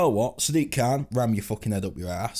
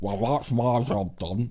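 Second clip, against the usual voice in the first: slow, drawn-out, froggy voice. Imitating a politician quitting his job: froggy Nigel Farage voice. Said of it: "He's a bit froggy".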